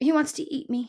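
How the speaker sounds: barely-there, faint, feeble, high-pitched voice. Reading a story aloud, Poppy answers Aerith's question, faint. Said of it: "Poppy said faintly".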